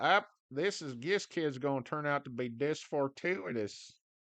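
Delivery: put-on grandpa voice. Retelling what grandpappy used to say: put-on voice imitating grandpappy.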